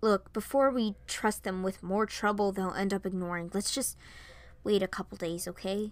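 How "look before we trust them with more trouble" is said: usual speaking voice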